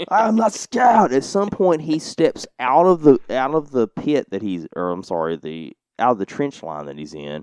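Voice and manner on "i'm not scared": imitated screaming, higher pitch. Retelling a film soldier yelling at paratroopers from a trench: imitating someone screaming. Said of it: "they can hear this German screaming".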